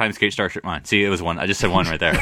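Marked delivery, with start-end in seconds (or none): 0.0-0.8 rushed, rapid-fire, words run together in one go. Saying three words really fast so they count as one, words said really fast. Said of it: "Say it really fast".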